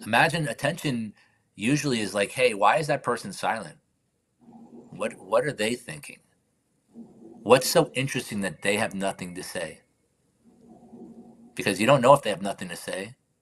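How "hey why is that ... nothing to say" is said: ordinary talk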